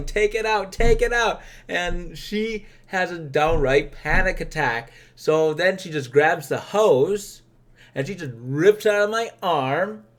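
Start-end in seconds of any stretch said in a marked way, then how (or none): 0.0-1.4 loud, repeated, high-pitched yell. Recounting a bloody needle mishap with a drill sergeant, retelling a yell. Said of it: "I'm yelling".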